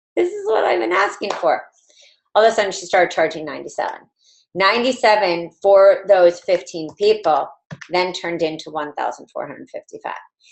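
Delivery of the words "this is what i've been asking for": put-on, very high-pitched speech through laughter. Retelling her reply when people asked for a program: imitating someone laughing while talking. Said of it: "And she was laughing like".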